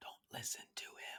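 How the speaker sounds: soft whispered aside.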